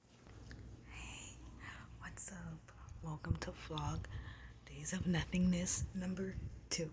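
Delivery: whispered speech. Greeting viewers at the start of a vlog episode, whispering. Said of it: "I'm whispering".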